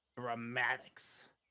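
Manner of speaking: muttering under breath. Voicing the smallest goblin as it walks past: muttering under breath. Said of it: "you can hear him mutter under his breath".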